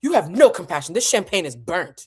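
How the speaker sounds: indignant, angry put-on voice, offended and furious. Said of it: "I sound like like just an angry [name]".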